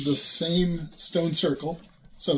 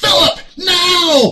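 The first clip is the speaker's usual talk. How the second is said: very high shriek, stretched and drawn out; 13 semitones higher, 13 dB louder than usual. Voicing a character who reappears and grabs another by the front: screaming. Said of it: "and he screams".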